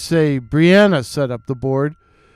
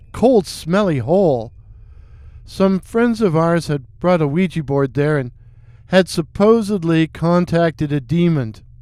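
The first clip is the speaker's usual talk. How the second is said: plain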